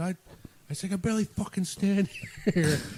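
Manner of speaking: mock shouting. Recounting yelling back at a woman in front of security, retelling own yell. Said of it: "I fucking yelled at her, and I said".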